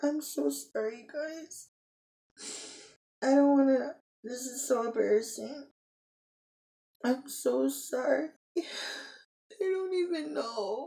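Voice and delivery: high, tearful voice, crying through the words. Signing off to viewers while speaking on camera, crying. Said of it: "I can't believe I'm crying on camera".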